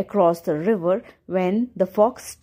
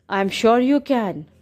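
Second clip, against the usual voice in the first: usual speaking voice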